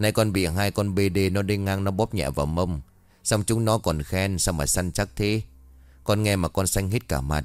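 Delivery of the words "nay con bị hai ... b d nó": ordinary delivery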